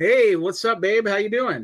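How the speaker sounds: loud, high-pitched hollered yell. At the start of their podcast, one host greets the other, yelling. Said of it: "No need to yell at me".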